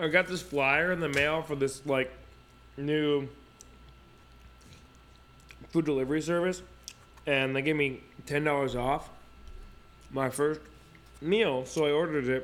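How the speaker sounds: talking while chewing, mouth full of food. Host explaining a food delivery order while eating: talking while chewing. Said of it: "I'm munching really hard over here".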